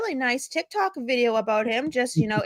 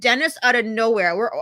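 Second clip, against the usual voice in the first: ordinary talk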